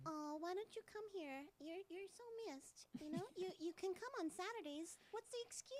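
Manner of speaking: very high, squeaky helium-balloon voice. Asked by another speaker to deliver an insult in that voice: helium-filled voice. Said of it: "that helium-filled voice".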